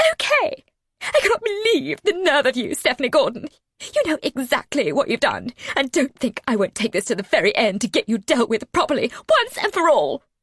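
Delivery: loud, piercing, shrill, hissed squawk. Reading a story aloud, an enraged character: shrill squawk. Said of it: "her voice a shrill squawk".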